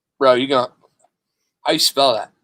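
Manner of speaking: ordinary delivery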